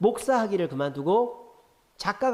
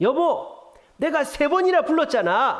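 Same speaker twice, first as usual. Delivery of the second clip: put-on indignant, angry complaining tone, pitched very high; 11 semitones higher, 4 dB louder than usual. Telling a story, acting out a husband calling his wife, mock-angry. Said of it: "남편이 화가 났어요".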